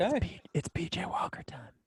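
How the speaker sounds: hushed whisper. Naming a quarterback who will take over: whispering. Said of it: "Why are we whispering?".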